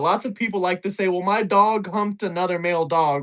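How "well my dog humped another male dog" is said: normal talking voice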